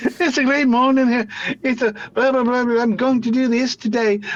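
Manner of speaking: mock Scottish child accent. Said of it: "I'm not gonna do the Scottish accent".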